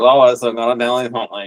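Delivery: all-nasal delivery, spoken entirely through the nose. Showing how the actor played the hunched, nerdy character: imitating Christopher Reeve's nasal Clark Kent. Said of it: "all nasally".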